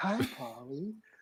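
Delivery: sexy, sultry female robot voice. Retelling how a reprogrammed movie robot talks: imitating a sexy woman robot voice. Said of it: "sexy, like, woman voice".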